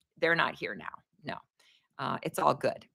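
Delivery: ordinary talk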